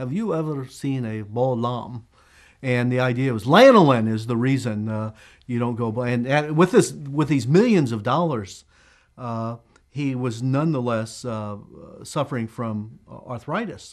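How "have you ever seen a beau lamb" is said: bad put-on French accent, slower. Retelling a tv ad where a man shows a lamb; terrible french accent. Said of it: "in this terrible French accent".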